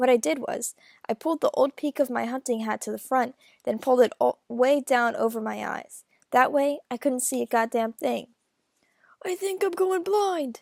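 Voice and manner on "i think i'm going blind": very hoarse, croaky, high voice, mournful. Reading the story, the narrator voices his line to Ackley: very hoarse voice. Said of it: "I said in this very hoarse voice".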